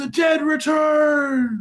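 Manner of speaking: shrill, very high, drawn-out shouting cry. Narrating a scene to players, voicing a man fleeing through flames, shouting. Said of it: "grabs you by the shoulders and shouts".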